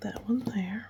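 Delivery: soft whisper. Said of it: "I don't know why I'm whispering".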